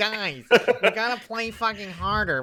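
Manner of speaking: barking, bossy commanding voice. Mocking a nerd who somehow became the boss, imitating a nerd yelling. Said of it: "some nerd like yelling that somehow became the boss".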